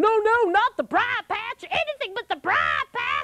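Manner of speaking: frantic, high, swooping panicked screaming and yelling. Telling a story as Brer Rabbit, begging not to be thrown: screaming and yelling. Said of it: "I'm screaming and yelling".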